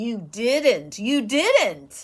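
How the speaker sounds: gloating, taunting jeer. Someone taunts the narrator about homework: taunting. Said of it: "Elizabeth taunted".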